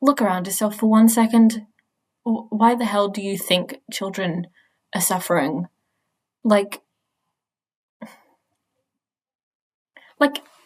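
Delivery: voice strained from holding back tears. Speaking to viewers about world events, holding back tears. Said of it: "I'm just trying not to cry".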